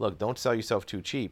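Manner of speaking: mock condescending tone. Speaker retells a man patting him on the shoulder, mock condescending. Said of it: "kind of condescendingly patted me on the shoulder and said".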